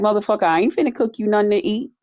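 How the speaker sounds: mock fed-up, angry, pissed-off tone. Retelling refusing to cook for a partner who came home late: retelling own angry retort. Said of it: "I was pissed off".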